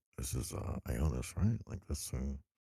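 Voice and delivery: half-whispered, slow, halting and hesitant. Quietly asking another character whether this is Ionis: whispering in character. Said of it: "kinda whisper".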